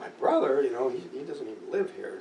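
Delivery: ordinary delivery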